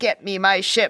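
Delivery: ordinary talk, nothing marked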